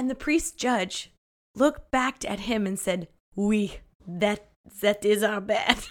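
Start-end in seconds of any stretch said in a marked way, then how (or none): 3.3-5.8 fake, put-on French accent. Telling a story, the speaker voices the priest judge's reply: put-on French accent. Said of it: "giving him a French accent".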